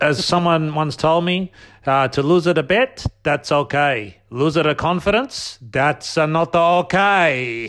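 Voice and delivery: put-on Russian accent. Quoting something someone once told them, in a mock russian accent. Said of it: "Is that a Russian? Where's that accent from?".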